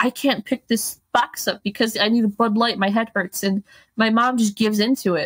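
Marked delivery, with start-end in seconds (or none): 0.0-3.4 blubbering, whiny, tantrum-like crying complaint. Retelling the mother's boyfriend's complaint while loading a car: imitating someone crying. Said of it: "he's crying, like".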